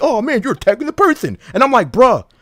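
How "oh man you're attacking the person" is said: mocking imitation voice, higher pitch. Arguing, mocking how the other speaker keeps complaining: mocking imitation of a friend. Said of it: "he's going into fucking Twitter mode. Like".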